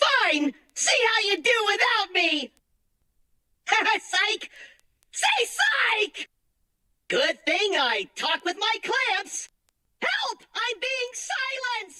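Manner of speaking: grating robot voice. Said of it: "his voice is like nails on a chalkboard".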